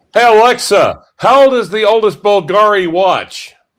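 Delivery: very high, loud shout. Addressing a voice assistant mid-conversation, screaming at it. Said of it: "Why are you screaming at her?".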